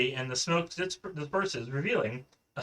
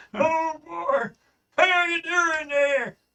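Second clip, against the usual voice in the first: put-on elderly Southern voice, very high; 13 semitones higher, 6 dB louder than usual. Voicing a Starfleet officer a player asked for: old Southern voice. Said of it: "how about really southern and old?".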